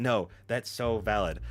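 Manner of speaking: usual speaking voice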